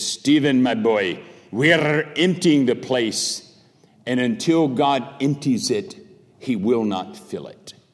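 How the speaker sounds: put-on Welsh accent throughout. Retelling a conversation, the speaker quotes Lloyd-Jones's reply in his Welsh accent. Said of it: "in his Welsh accent".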